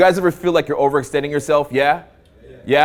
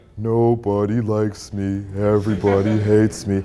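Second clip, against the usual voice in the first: low cartoon voice, every word dragged very slowly; 6 semitones lower than usual. Explaining a cartoon reference to listeners, doing an Abominable Snowman impression. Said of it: "That's my impression".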